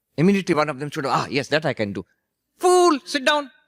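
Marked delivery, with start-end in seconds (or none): 2.6-3.5 loud, very high-pitched voice. Retelling someone's retort to a listener who offered to act, high-pitched voice. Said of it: "He had a high pitched voice".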